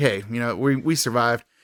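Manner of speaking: usual speaking voice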